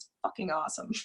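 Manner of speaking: half-whispered, breathy, under-the-breath sarcastic tone. Talking about a personal Saturn return: sarcastic. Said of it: "I'm being sarcastic".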